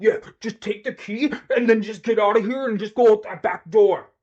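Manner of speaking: heavy-handed, over-stressed delivery. Critiquing the actor playing the commissioner in a prison scene, imitating an actor's emphatic delivery. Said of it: "and he's like".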